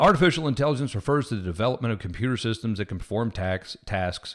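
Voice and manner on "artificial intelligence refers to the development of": ordinary delivery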